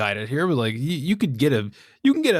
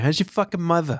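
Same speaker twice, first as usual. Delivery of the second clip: put-on Boston accent, higher pitch; 3 semitones higher than usual. Speaker voices what their Boston Terrier says each morning, put-on Boston accent. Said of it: "That's what my Boston Terrier says to me".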